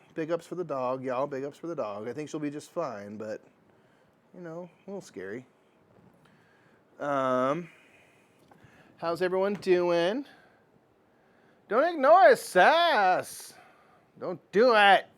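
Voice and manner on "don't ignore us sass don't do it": very loud, high, drawn-out shout. Calling out to someone so they will hear: shouting loudly. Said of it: "I'm shouting loudly so you hear me".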